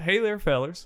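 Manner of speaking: mock Southern American accent. Priming yourself to do a line in a Southern accent. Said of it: "let me prime myself".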